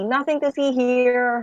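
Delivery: announcer-style call, drawn out. Telling a gathering crowd in character to move along: said loudly.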